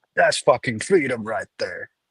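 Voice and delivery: ordinary talk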